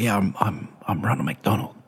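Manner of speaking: hushed half-whisper, under the breath. Retelling a performer's arrival at the manager's office: imitating someone half-whispering. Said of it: "he kind of whispers".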